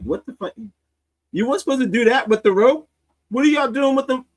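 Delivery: mock stunned disbelief, very high-pitched shocked outburst. Retelling God watching with popcorn: voicing God, shocked. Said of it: "God had his popcorn, and he was like".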